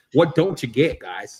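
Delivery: acted, fed-up, pissed-off, exasperated tone. Showing how Jamie sounds when he gets pissed: imitating Jamie getting pissed. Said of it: "He gets real pissed".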